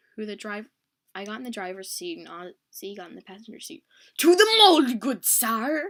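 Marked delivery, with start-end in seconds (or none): 4.2-5.9 very loud, drawn-out, bad fake knight voice. Retelling what she yelled from the passenger seat, yelling in a bad knight voice. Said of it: "She yelled in a butt night voice".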